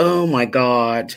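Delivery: talking while giggling through the words. Going live on a stream, laughing while talking. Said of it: "I'm laughing at myself".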